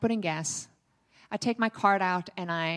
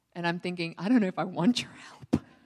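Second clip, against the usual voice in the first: usual speaking voice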